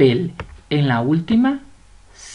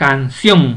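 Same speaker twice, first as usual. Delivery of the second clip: canción with stress on final syllable ción; 4 semitones lower, 3 dB louder than usual. Spanish lesson on stressed syllables and written accents; stress on ción in canción. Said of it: "La mayor fuerza de voz la lleva en sión".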